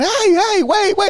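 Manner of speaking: put-on, very high, drawn-out, stretched-out screams. Telling a story, the speaker acts out a woman locked in an asylum, mock screaming. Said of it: "and she's screaming".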